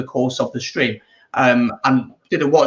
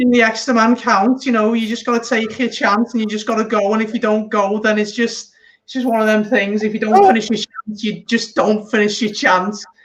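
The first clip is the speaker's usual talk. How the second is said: Scouse pundit voice, pitched way up; 9 semitones higher than usual. Doing rugby analysis after being teased about sounding Scouse: Jamie Carragher impression. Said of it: "You and Jamie Carragher?".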